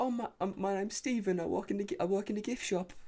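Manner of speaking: put-on very high pitch, light, gentle English accent. Imitating an actor's accent as a timid gift-shop worker: imitating Oscar Isaac's accent as Stephen. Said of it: "he's like".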